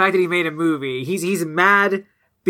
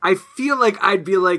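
ordinary delivery

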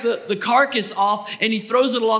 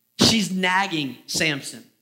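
plain

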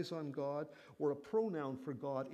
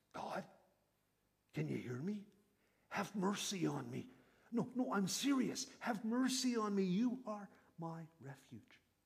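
whisper, higher; 3 semitones higher than usual. Acting out David praying in the cave: whispering as David. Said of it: "In a whisper".

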